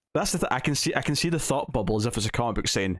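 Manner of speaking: normal talking voice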